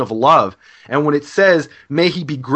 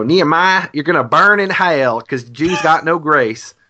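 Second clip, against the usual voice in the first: put-on Deep South American woman's accent. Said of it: "That's my Southern accent".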